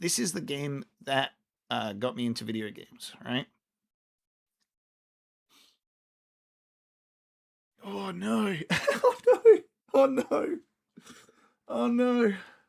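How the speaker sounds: on the verge of tears, choked-up, very high. Reacting to newly released cover art on stream, tearing up. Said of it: "I didn't expect to have tears form in my eyes".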